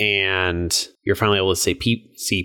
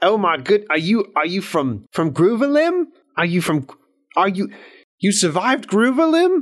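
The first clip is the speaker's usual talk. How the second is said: bad Scottish accent, much higher; 11 semitones higher than usual. Speaker voices a character meeting survivors in a role-play, in a bad Scottish accent. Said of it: "That's [name]'s opinion of a Scottish accent".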